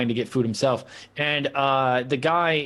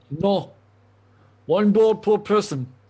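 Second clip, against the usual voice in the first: slow, pitched-up put-on Russian accent; 7 semitones higher than usual. Voicing the man behind the counter refusing a second bowl: Russian accent. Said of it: "make you guess what accent I was doing there".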